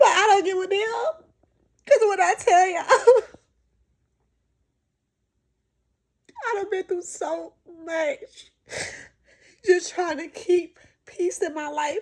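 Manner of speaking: crying while talking. Talking to viewers about how far they have come, crying while talking. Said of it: "but I'm crying".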